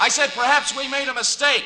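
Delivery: very high-pitched yelling shout. Speaking to her through a door, shouting. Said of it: "Do you have to shout like that?".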